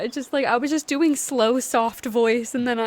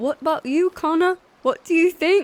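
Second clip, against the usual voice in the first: awkward, lilting, attempted Scottish accent; 4 semitones higher, 3 dB louder than usual. Showing how an attempted scottish accent would sound: attempted scottish accent. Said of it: "I wish I could do a Scottish so bad".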